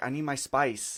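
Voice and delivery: put-on Mexican accent. Retelling how he shooed them away at night: imitating a Mexican accent. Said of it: "because he's from Mexico".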